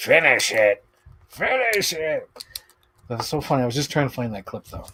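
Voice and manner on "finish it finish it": put-on slow, drawn-out goblin voice. After losing his point, the speaker announces and switches to a goblin voice. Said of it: "Goblin voice".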